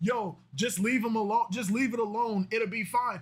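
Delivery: ordinary talk, nothing marked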